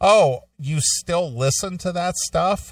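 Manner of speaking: disgusted, disdainful, scornful, very high and drawn out. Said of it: "with such disgust and disdain in her voice".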